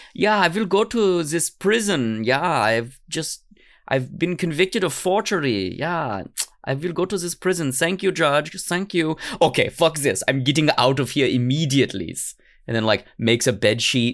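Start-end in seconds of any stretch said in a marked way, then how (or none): 0.2-12.2 put-on German accent, pitched up, kept up throughout. Acting out a man in a story he is telling, in a put-on German accent. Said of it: "I don't know why he has a German accent".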